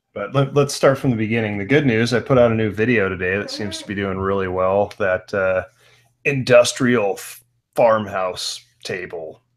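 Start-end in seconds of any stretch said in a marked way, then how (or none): 5.0-9.4 big, slow movie-trailer announcer delivery. Announcing the product name from the new video, in a movie voice. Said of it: "I say it in a movie voice".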